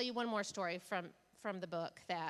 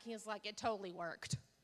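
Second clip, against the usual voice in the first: ordinary talk, nothing marked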